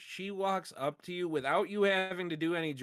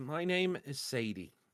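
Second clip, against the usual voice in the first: slow, maternal, almost nurturing voice; 2 semitones lower than usual. Voicing a horse answering a druid who asked its name: motherly tone. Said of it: "she says in this, like, motherly tone almost".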